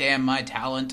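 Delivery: ordinary talk, nothing marked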